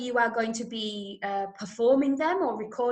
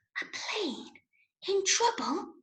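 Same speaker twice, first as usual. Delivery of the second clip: barely audible, really quiet whisper; 8 semitones higher, 5 dB quieter than usual. Coaching someone on different ways to read a radio drama line, really quiet. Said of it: "you might say it really quietly".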